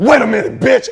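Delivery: loud, cold slasher-style voice. Retelling a reply to a lady asking them to hurry: Freddy Krueger voice. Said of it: "he hit the Freddy Krueger voice".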